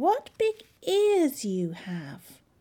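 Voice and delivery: crying out, high exclaiming cry. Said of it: "she cried".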